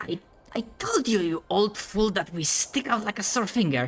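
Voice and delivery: conspiratorial whisper. Acting out a bit, the speaker voices the second one in a conspiratorial whisper. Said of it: "does the conspiratorial whisper".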